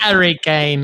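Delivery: put-on poor British accent. Repeating a player's name as a joke: bad British accent. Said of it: "I can't do a British accent very well".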